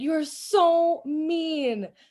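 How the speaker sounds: acted, tearful, high-pitched bawling whine. Speaker retells how she reacted when he took her phone; acting out past self bawling. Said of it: "I'm like bawling".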